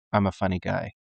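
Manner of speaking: low, dead flat, deadpan delivery. Retelling a TV scene where Angel answers Buffy's joke: deadpan Angel voice. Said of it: "Angel's so deadpan and straight-faced".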